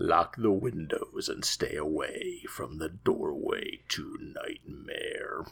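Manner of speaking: slow, breathy, spooky, sinister creepy whisper. Reading the closing line of a written intro, in a creepy voice. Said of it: "next bit is said in a creepy voice".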